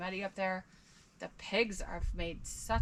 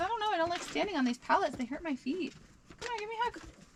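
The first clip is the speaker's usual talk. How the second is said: squeaky, very high-pitched dog voice; 11 semitones higher than usual. Speaking for a whining dog that wants a hug: voicing the dog. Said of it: "He says".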